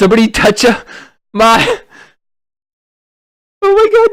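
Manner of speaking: very high, loud, panicked shriek.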